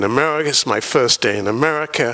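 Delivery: ordinary delivery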